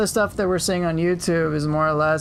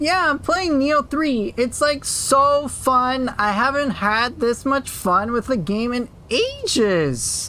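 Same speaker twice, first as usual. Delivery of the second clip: put-on high, nasally voice; 7 semitones higher than usual. Raising his pitch as a bit, high nasal put-on voice. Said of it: "Gotta get a little more nasally".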